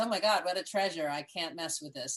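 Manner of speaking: normal talking voice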